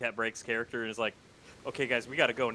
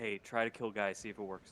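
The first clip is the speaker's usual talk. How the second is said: soft, half-whispered voice, said to the side; 2 semitones lower, 8 dB quieter than usual. Leaning over to Ronto in the game to suggest something: half-whispering in character. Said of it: "lean over to Ronto and just whisper".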